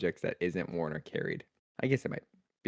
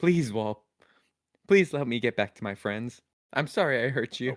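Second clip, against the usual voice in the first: earnest begging mixed with apologetic tone; 4 semitones higher than usual. Player's character addressing a shifting stone wall: pleading, apologetic. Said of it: "trying to both apologize and persuade it".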